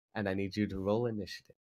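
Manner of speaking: ordinary talk, nothing marked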